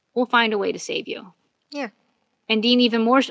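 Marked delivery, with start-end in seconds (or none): 0.2-1.4 mock-casual, very nonchalant tone, quieter. Recapping a show, a brother answers one who fears dying: retelling a very nonchalant reply. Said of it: "Sam very nonchalantly says".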